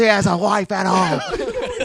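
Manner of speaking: drawn-out commentator call with swooping, swinging pitch. Recalling how a wrestling announcer called matches: Jim Ross impression. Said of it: "He goes".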